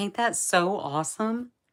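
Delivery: shrill, high, thrilled, very loud excited gushing. Quoting what Johnny's girlfriend said to her, imitating someone excited. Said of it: "she called me all excited".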